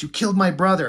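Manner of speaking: put-on angry voice. Retelling a line from a fight scene: imitating an angry Invincible. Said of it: "he's pissed".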